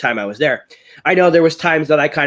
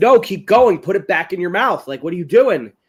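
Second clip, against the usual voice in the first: mock shouting, high-pitched yelling; 5 semitones higher than usual. Retelling yelling at a contestant who spat a pepper out: retelling yelling. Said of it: "and I'm like".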